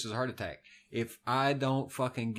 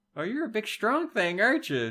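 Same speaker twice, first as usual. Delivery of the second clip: put-on very high, sing-song, swooping baby talk; 10 semitones higher, 3 dB louder than usual. Retelling how a woman spoke to Chewbacca: imitating baby talk. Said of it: "baby talking him".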